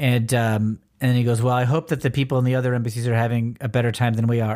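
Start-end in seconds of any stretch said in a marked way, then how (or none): none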